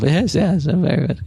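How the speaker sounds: chattering while chewing. Voicing a character pacing the deck, chewing and muttering to herself: character Cordina muttering to herself while chewing. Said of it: "kind of chewing it, and she's kind of talking to herself".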